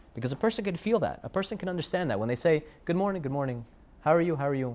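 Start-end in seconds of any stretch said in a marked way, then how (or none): none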